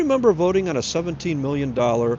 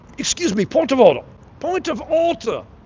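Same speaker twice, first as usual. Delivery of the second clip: fake British accent, pitched very high; 11 semitones higher, 4 dB louder than usual. Mocking a man at a meeting who talks like he's british: put-on british accent. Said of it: "He talks like like he's got a British accent".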